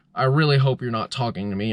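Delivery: plain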